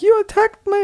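very high, loud, piercing scream.

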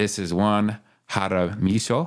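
pronounced in a Japanese-sounding way. Podcast host introduces his co-host's name, saying it more like japanese. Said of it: "I said that more like Japanese".

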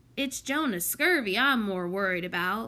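usual speaking voice

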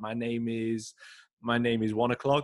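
slow, halting broken English, words stumbled, repeated. Retelling an answer about work start time: imitating someone's broken english. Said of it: "was not the best".

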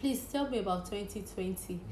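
ordinary delivery

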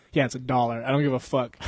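normal talking voice

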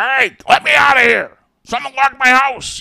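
grumbling out loud and high-pitched. Retelling a joke by the trash cans for passing kids, in an Oscar the Grouch voice. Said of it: "in the Oscar the Grouch voice".

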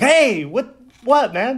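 very high, very slow, drawn-out, startled cry. Retelling how a woken friend reacted, imitating a surprised reaction. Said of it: "he was all surprised".

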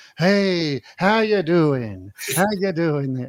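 put-on slight Italian accent. Showing how his first attempt at the character sounded: early Floyd voice, almost Italian. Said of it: "Floyd had almost an Italian".

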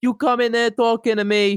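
put-on, full-on Italian gangster accent. Performing a joke line, in an Italian mobster accent. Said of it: "that's full Italian mobster".

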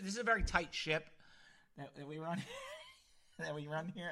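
giggling, laughing through words, swooping. Describing the show as a tight ship, laughing while talking. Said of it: "I can't even get it out without laughing".

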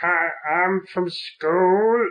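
put-on high, slow nerdy voice. Describing what a nerd is, the speaker puts on a nerd voice. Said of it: "sort of voice".

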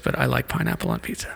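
hushed, soft, secretive, confiding whisper. Admitting a food preference during a quick-fire interview: whispering. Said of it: "I'm gonna whisper this".

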